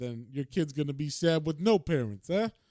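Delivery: imitated, exaggerated Italian accent. Retelling a story where men force someone into collecting money, stereotypical Italian accent. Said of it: "You just give them a stereotypical Italian accent".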